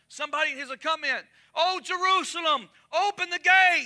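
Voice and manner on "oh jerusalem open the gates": long, high, carrying drawn-out cry. Retelling David calling to Jerusalem at the gate: acting out crying out. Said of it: "he's crying out".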